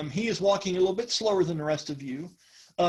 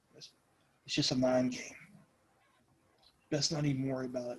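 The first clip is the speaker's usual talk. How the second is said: hushed, soft, close, secretive, confiding half-whisper; 5 semitones lower, 7 dB quieter than usual. Telling a scene, a man leans over and speaks to the listener; half-whispering. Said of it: "he kind of whispers over to you and he goes".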